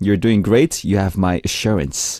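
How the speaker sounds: normal talking voice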